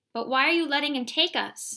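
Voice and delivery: crying out, high-pitched. A child pulls away from Father, who says a man will take them, crying out. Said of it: "I cried, pulling away".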